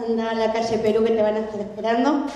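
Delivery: ordinary talk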